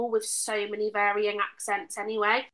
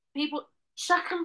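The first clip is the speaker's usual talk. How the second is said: Scouse accent on every word, pitched up; 6 semitones higher than usual. Asked whether they can do any regional accents, trying a Liverpudlian accent. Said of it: "That's my Liverpudlian accent".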